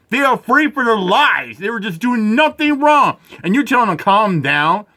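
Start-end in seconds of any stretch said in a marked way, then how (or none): none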